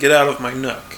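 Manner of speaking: usual speaking voice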